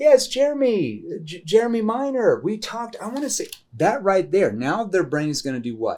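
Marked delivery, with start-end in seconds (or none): 0.0-3.0 casual, friendly sing-song, high and swooping. Showing how to open a sales call: familiar tone. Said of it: "because I'm using a familiar tone up here".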